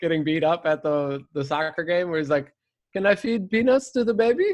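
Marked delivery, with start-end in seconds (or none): 2.9-4.5 put-on Swedish man character voice, higher. Redoing an old bit, a Swedish guy asking to feed peanuts: Swedish guy voice. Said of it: "the Swedish guy trying to feed peanuts".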